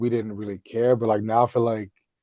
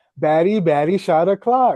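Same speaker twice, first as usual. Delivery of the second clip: mock little girl scream, much higher and louder; 7 semitones higher, 5 dB louder than usual. Speaker recalls a young girl at a swimming pool, imitating a little girl screaming. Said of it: "she's screaming like".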